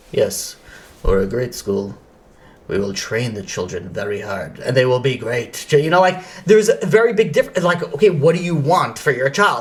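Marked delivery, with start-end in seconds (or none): 0.1-5.7 very low, flat, unenthused deadpan, acted. Recalling school interviews, speaker mimics the unexcited rabbis: mimicking flat, unenthusiastic talk. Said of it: "the ones that were just like".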